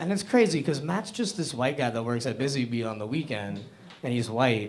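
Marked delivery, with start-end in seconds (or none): none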